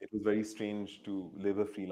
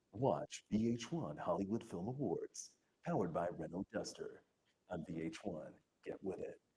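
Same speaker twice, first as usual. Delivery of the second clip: soft, laid-back, cool American announcer voice; 5 dB quieter than usual. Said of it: "much more like cool dude kind of American accent".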